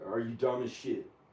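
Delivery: plain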